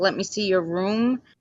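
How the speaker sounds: usual speaking voice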